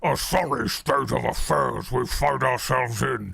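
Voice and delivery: put-on orc character voice. Retelling how an eighteen-year-old played orcs in his bedroom: orc impression. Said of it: "just doing his best orc impression".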